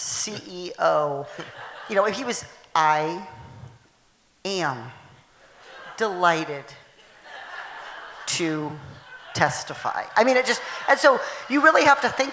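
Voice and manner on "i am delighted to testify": very slow, halting, broken-up phrasing. Imitating a CEO testifying at a hearing: slow Mark Zuckerberg impression. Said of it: "talk as slowly as Mark Zuckerberg".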